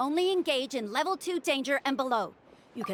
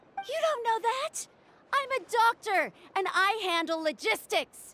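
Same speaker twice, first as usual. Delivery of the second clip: high, slow, drawn-out yelling; 8 semitones higher than usual. Arguing with another character who made a decision: shouting. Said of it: "she sounds exactly like Hex Juice when she's shouting".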